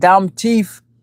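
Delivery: put-on Jamaican accent. Retelling what a man said, quoting his words: put-on Jamaican accent. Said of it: "he has that Jamaican accent".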